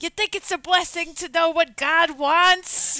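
put-on shrill, very loud old-school 1980s New York accent. Praising a movie's accents, quoting one of its characters: 80s New York accent. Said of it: "these like 80s ass like New York, he's like".

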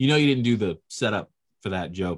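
ordinary talk

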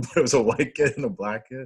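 laughing through the words.

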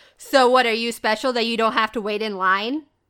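loud voice, right in the ear. Retelling how a guy at the bar spoke into her ear: loud remark into ear. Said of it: "talks into my ear, but loudly".

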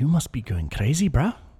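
half-managed put-on South African accent. Retelling what a man said about someone's kids, in an attempted South African accent. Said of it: "I can't do the South African accent".

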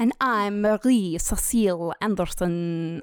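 put-on French accent turning Transylvanian. Show host introducing herself after her co-host, French accent drifting Transylvanian. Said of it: "we started French and ended like".

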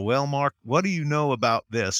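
nice, easygoing Southern drawl. Recalling how a senior mentor spoke to him: imitating Raymond's Southern drawl. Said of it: "in his nice Southern drawl".

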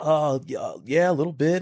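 play-acted shaky, trembling, slow, quivering, nervous reply. Retelling own nervous answer to an interviewer: imitating own quivering voice. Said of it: "My voice was quivering".

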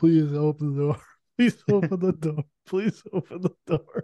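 mock begging through sobs, repeated. Retelling a scene of a woman at Leon's door, imitating a character crying. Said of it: "she's just crying".

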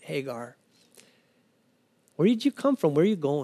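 gentle, soft, caring voice. Speaker imagining Jesus asking Hagar where she came from, acting out a tender voice. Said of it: "I have to believe it's in a tender voice".

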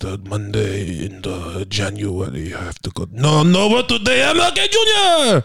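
put-on Japanese accent, swooping sing-song, Jr drawn out. Asked to do an impression of a man in japan on mlk day, trying it. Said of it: "do an impression of a man in Japan".

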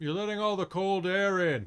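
very high, loud, nagging, scolding dad voice. Voicing a character as the others head out the door, dad voice. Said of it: "You sounded like my dad".

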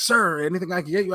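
high, super-excited, overeager voice. Telling how a man popped out from behind a desk, imitating him super excited. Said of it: "like super excited".

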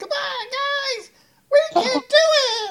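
very high, loud, squeaky little creature voice, stretched. Describing a horde of tiny cute killer things for an adventure, in a tiny high-pitched voice. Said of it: "those little high-pitched voices".

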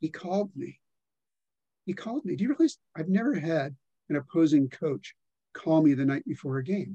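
astonished, incredulous, disbelieving tone. Retelling how a coach reacted to a rival's call: imitating Ladouceur's incredulous tone. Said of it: "in this note of incredulity".

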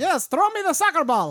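very high, very loud put-on Mexican accent. Asked to do an accent on the spot, the speaker does a put-on Mexican accent. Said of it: "do a Mexican accent right now".

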